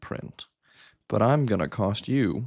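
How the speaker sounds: ordinary delivery, nothing marked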